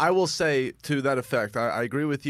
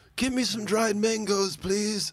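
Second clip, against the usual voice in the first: mock mobster voice, pitched high. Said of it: "he has this very, like, Godfather voice".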